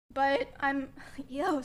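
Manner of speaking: voice breaking and cracking mid-phrase. Speaker talking about a man and his community leaving them alone, voice cracking. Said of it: "sorry voice crack".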